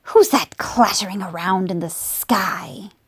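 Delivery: sibilant, hissed scorpion creature voice. Reading a story aloud, the narrator voices a scorpion below, with a hissing voice. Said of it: "it hissed".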